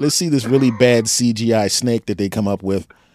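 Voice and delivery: ordinary talk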